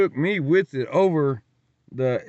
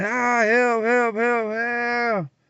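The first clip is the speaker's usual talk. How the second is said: mock very high, drawn-out crying scream; 9 semitones higher than usual. Recounting lying on the patio after a fall, retelling screams for help. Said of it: "just crying, screaming".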